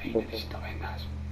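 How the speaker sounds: unvoiced, hushed whisper.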